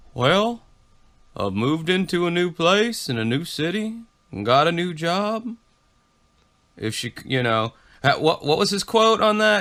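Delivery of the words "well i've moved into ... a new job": put-on, very sedated-sounding delivery. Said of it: "he's just very sedated".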